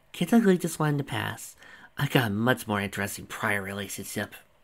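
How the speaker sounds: ordinary delivery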